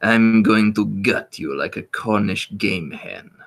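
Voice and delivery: put-on, slightly snooty, haughty French accent. Quoting a game character's typical line: snooty French accent as the Spy. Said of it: "slightly snooty sounding French gentleman who says things like".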